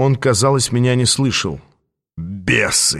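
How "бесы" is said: contemptuous, scornful snort, much lower. Aas reacts after the two figures vanish, with a contemptuous snort. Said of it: "презрительно фыркнул он".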